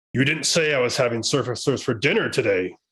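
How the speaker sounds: teasing, joking, playful dragon voice. Narrating a scene, voicing a dragon calling out from the entrance: joking dragon voice. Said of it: "kind of in a joking tone".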